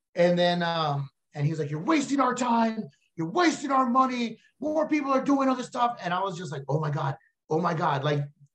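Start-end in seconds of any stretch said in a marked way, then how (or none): 1.7-6.0 mock yelled rant, high-pitched. Retelling a stranger yelling in the cafeteria, imitating a man yelling. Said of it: "listening to him yell".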